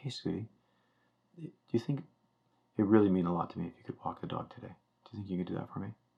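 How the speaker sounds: soft, quick, gentle, softened delivery. Reenacting asking sweetie to walk the dog, the speaker says it softer. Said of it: "say it softer".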